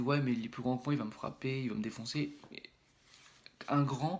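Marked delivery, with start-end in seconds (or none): none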